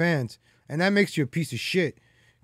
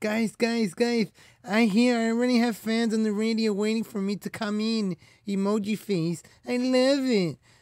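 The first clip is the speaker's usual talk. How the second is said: put-on woman's voice, much higher and slower; 5 semitones higher than usual. Mocking a woman the speaker calls an idiot, imitating her voice. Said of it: "I gotta do her voice".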